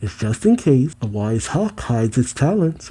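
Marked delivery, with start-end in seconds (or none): none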